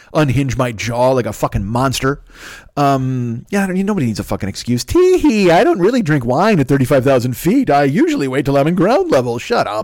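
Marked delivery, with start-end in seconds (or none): 4.9-9.4 put-on prim, dainty, prissy old-lady voice. Mocking a fellow passenger who made excuses for drinking wine: mocking imitation of a granny. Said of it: "chug your wine, Granny".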